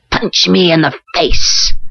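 shrieking, screeching harpy-like voice. Narrator voices the grinning doctor speaking to Gary: screeching like a harpy. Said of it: "his voice the screech of a harpy".

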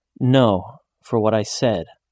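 ordinary delivery

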